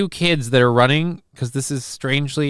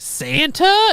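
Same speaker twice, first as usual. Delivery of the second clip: very high, deliberately irritating, really annoying voice. Retelling a movie scene, imitating Fran Drescher: annoying voice. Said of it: "in her really annoying voice".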